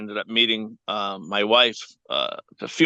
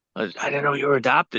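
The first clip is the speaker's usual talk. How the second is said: put-on whisper, higher; 4 semitones higher than usual. Retelling how one person reacted on learning of the adoption: imitating someone whispering. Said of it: "she's, like, whispering".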